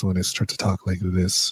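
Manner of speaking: seductive low voice. Speaker showing the voice they get when talking like this, sexy deep voice. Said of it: "I have a really sexy deep voice".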